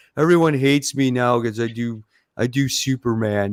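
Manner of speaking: blubbering through put-on tears, weepy whine. Imitating a comic writer crying that he wants to go back: mock crying as Bendis. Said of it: "He's crying. He's going".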